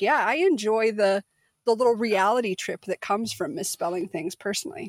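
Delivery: ordinary talk, nothing marked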